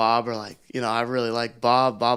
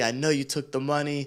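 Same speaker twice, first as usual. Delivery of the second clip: mock yelling voice; 2 semitones higher, 5 dB quieter than usual. Retelling how the man he helped pack accused him, imitating him yelling. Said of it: "he's like yelling at me".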